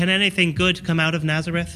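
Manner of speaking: ordinary talk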